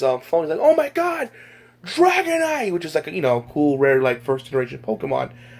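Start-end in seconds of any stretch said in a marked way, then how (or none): 0.6-2.7 high-pitched excited yell. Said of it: "he yelled on his, um, phone".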